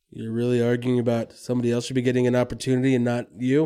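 ordinary talk, nothing marked

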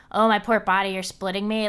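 ordinary talk

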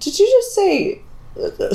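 very high, slow, mocking whine of disbelief.

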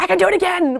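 high, eager pleading tone. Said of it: "I'm like".

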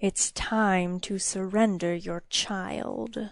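slow, hushed, hissing demon-like creature voice. Narrator voicing a little demon confronting the queen: hissing demon voice. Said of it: "the demon hissed".

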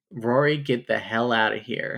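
normal talking voice

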